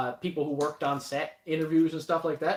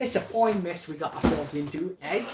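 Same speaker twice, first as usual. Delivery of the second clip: bad, fake put-on British accent. Filming a YouTube video, slipping into a bad British accent. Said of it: "bad British accent came out".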